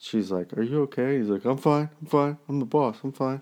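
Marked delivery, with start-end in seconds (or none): 1.4-3.4 mock crying, high and tearful, insisting. Recapping an episode, Tony answers Carmela in the woods, imitating Tony crying. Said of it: "and he's crying".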